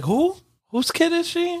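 put-on high confused elderly voice.

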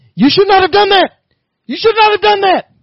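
very high, loud, furious, repeated yelling. Retelling how he got really pissed after the fare was paid; imitating someone yelling angrily. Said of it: "he starts yelling".

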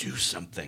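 hushed whisper. Gray Ellen squeezes Sam's arm and speaks to him, whispered. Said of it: "Gray Ellen squeezed Sam's arm and whispered".

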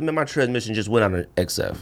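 ordinary delivery

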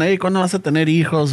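plain

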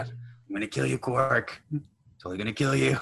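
high-pitched alien character voice. Imitating the cup-faced alien threatening Quark: impersonating the cup-faced alien. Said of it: "[name] is doing an impersonation of".

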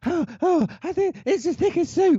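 very high, loud, breathless, theatrical gasping. Quoting Sheridan Smith in an out-of-breath scene: imitating Sheridan Smith gasping for air. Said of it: "loudly, theatrically gasping for air".

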